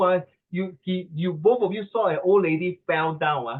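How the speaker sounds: ordinary talk, nothing marked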